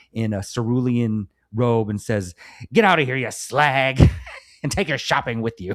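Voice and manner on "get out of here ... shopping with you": play-acted furious, angry, pitched-up delivery. Retelling a film scene where Richard Burton orders a woman out: angry Richard Burton impression. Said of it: "comes out stomping, angry".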